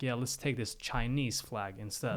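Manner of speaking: ordinary talk, nothing marked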